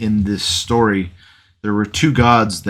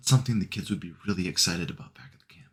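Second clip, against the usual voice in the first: very soft, hushed half-whisper, said off to the side; 2 semitones lower, 11 dB quieter than usual. Holding him aside, covering his ears, half-whispering over to Franklin. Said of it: "just whisper over towards Franklin".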